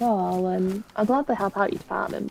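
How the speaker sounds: ordinary talk, nothing marked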